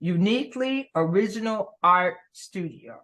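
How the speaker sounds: very slow, deliberate, drawn out word by word. Host introducing a guest's studio name to the audience, saying it really slowly. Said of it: "I'm going to say this really slowly".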